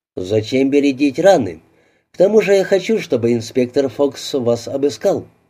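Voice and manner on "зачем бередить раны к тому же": usual speaking voice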